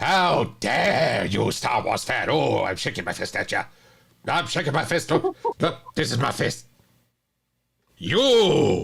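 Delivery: indignant angry outcry with rising rage. Scolding a star wars fan in jest: mock anger. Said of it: "This is me being angry".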